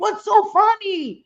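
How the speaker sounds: mock yelling, high-pitched man's scream. Telling how he was stuck in the water, the speaker retells someone screaming. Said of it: "So he starts screaming".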